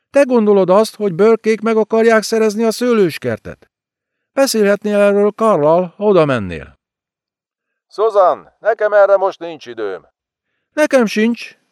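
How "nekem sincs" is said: high-pitched shouting cry. Narrator reads a woman's retort to the man: shouted. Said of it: "kiáltotta az asszony".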